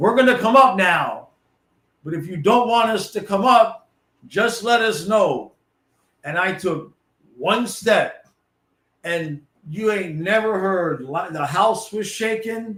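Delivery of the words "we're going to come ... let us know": mock raised yell, carrying upward. Retelling calling up the stairs toward a pounding noise: imitating own past yell. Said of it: "and I'm yelling".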